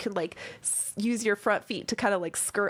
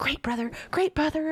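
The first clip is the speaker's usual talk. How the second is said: excited, nervous spider creature voice, higher pitch; 7 semitones higher than usual. Voicing dwarf spiders bowing to a player: excited, nervous dwarf spider voice. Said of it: "they bow to you very, like, excitedly".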